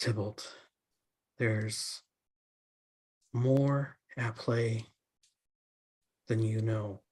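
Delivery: woman's hushed stage half-whisper. Voicing a woman speaking in a dream scene: half-whispering woman's voice. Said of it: "Can you hear me okay when I whisper?".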